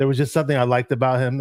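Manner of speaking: ordinary talk, nothing marked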